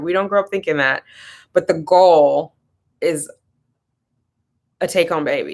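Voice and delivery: choked-up, halting voice catching with emotion. Speaking about how people expect to become parents, getting choked up. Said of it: "I'm getting choked up".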